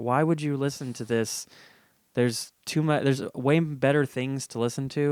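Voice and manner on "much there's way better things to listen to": normal talking voice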